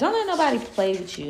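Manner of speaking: put-on youthful Miami voice, loud and high. Giving advice about time and plans, in a young Miami voice. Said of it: "in my young Miami voice".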